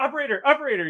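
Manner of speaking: mock yelling. Retelling a woman yelling at an automated phone line, imitating someone yelling. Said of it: "she's yelling to the phone over and over".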